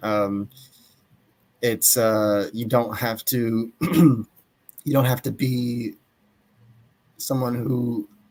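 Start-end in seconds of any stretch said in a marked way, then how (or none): 3.8-8.1 strained, hoarse voice giving out. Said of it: "I'm losing my voice".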